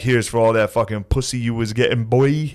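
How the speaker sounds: put-on New Jersey accent. Quoting a Venmo message from a jacked guy from Jersey: put-on New York Guido accent. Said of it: "New York, like, Guido accent".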